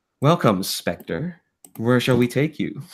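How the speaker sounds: put-on smooth computer voice. Narrating a game scene where a car greets spectre, smooth computer voice. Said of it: "it's just a smooth computer voice going".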